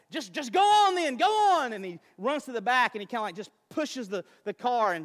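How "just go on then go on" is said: shrill, loud, very slow drawn-out screaming. Retelling a story, the speaker quotes a man screaming at his wife: imitating a man screaming. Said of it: "he's screaming at his wife and he's like".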